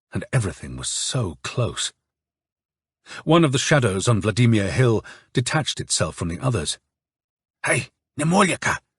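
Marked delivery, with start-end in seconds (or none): 7.6-8.7 hissed through teeth, higher pitch. A figure detaches from the shadows and calls to Nemolyaka, hissed through teeth. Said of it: "he hissed through his teeth".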